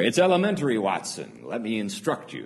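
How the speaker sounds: put-on exasperated voice. Explaining Holmes and Watson, voicing Holmes's reply to Watson, mock-exasperated. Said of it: "almost in an exasperated tone".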